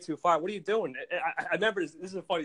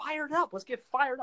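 put-on high, hyped-up, pumped-up rally yell; 8 semitones higher than usual. Retelling cheering on people with their heads down: retelling hyped-up shouting. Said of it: "Can you calm down?".

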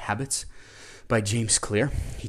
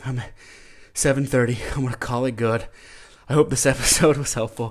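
winded, out of breath, higher and louder; 2 semitones higher, 6 dB louder than usual. After holding a long plank, the host wraps up the episode out of breath. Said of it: "I'm out of breath".

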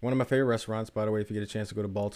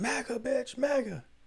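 very high, shrill, screeching, mocking screaming. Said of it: "He's just screaming".

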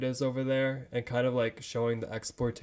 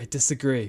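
put-on confident smiling delivery, louder; 6 dB louder than usual. Retelling a character's reply about a gambling debt: imitating a confident smiling delivery. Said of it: "so confidently and, like, with a smile on his face".

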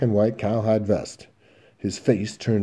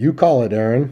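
unbothered, even-keeled, cool and calm; 2 semitones higher, 4 dB louder than usual. Durow speaks to Aaron in a tense standoff, cool. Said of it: "Durow said coolly".

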